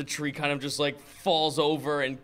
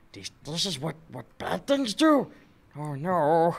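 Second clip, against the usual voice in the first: panting character voice, pitched higher; 2 semitones higher than usual. In the game, a player voices Quicken, blown away by it all: panting Quicken voice. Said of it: "he's like panting".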